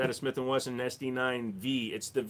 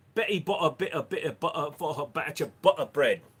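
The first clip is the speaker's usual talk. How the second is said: put-on Irish or British accent; 4 semitones higher, 4 dB louder than usual. Reading a tongue twister aloud in an irish or british accent. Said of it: "in an Irish or a British accent".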